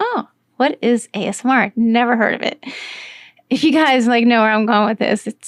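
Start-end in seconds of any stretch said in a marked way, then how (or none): none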